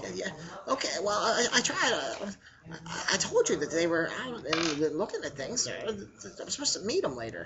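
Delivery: soft, small, hesitant, stammering goblin voice. Narrating a game scene, the storyteller voices an unseen speaker, squeaky little voice. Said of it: "the squeaky little voice like".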